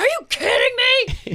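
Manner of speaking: very high, shrill, loud yell. Retelling a reaction to crew members at work: imitating own yelling. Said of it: "Just yelling at crew members".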